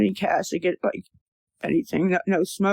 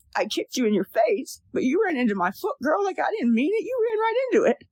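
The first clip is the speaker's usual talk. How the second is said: high squealing voice, swinging all over, rising; 8 semitones higher than usual. Speaker acting out what those who kicked her claim, in a mock high squealing voice. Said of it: "There's that high pitched squealing voice again".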